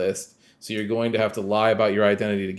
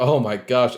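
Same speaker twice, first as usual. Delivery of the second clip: mock lovestruck swooning sigh; 2 semitones higher, 3 dB louder than usual. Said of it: "the weird, like, eighties, uh, rom-com thing".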